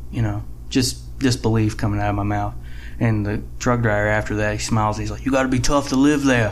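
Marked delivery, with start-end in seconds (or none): 5.3-6.5 put-on Philly-accented voice. Retelling what a smiling truck driver said, in a Philly accent. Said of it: "Is that a Philly accent or?".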